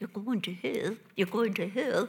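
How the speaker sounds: put-on English-accented speech. Retelling a woman with a megaphone sharing the gospel, English accent. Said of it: "she did it with an English accent".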